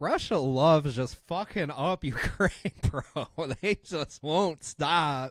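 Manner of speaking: talking through laughter. Speaker reacting to the news, laughing while talking. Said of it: "I'm sorry I'm laughing".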